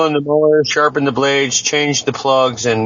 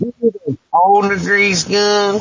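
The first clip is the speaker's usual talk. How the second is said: mock sarcastic tone, higher; 6 semitones higher than usual. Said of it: "the sarcastic oil change dude".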